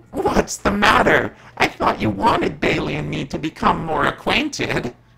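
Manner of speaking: vile, high, rasping, snickering demon hiss. A demon speaks to a man it just flung to the ground, vile hissing demon voice. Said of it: "The demon snickered in a vile hiss".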